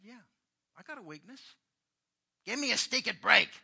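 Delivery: very loud, high, put-on New York accent. Retelling a friend in New York excusing his weakness: imitating a friend's accent. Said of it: "In his accent".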